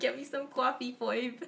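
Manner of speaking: joking, loud, high-pitched put-on Brooklyn accent. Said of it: "that's like a Brooklyn accent".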